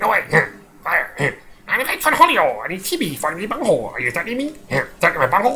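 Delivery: raspy, high-pitched, swooping cartoon voice. A speaker recalling cartoons they used to watch does a raspy Beavis voice. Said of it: "Beavis is always that really graspy voice".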